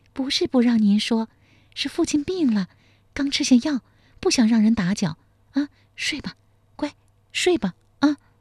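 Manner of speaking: coy, honeyed, sweet, high coaxing coo. A woman coaxing a man to sleep like a child, sweet coy voice. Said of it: "贺金蝉娇声说道".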